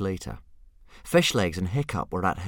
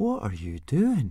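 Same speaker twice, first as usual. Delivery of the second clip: inquisitive, wondering tone, pitched up; 5 semitones higher than usual. A character asks someone speaking Dragonese what they are doing; curious question. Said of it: "Asked Fishlegs curiously".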